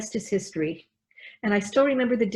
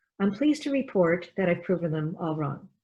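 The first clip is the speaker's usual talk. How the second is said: plain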